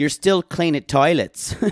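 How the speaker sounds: poor put-on Irish accent. Reading out the quote on the next teabag, in a bad Irish accent. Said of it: "I don't have a good Irish accent".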